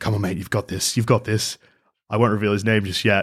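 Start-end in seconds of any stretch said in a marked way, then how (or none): 0.0-1.6 put-on muttering under the breath. Retelling a gym-goer's self-talk, imitating someone muttering under breath. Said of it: "speaking under his breath".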